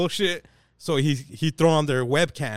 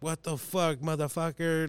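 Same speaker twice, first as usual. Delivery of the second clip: mock freaking-out outburst in a hushed voice; 7 dB quieter than usual. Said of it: "these fools just lose their mind".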